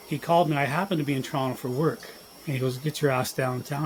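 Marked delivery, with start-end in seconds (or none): none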